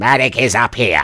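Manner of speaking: loud, high character voice. Comparing two high-pitched voices he does, speak in the loud Marek voice. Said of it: "It's loud for the microphone. I'm sorry about that".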